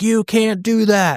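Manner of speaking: mock shrill, high, slow, drawn-out shout. Retelling how the clinic lady reacted to the thrown cup: imitating someone yelling. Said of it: "yelled at me".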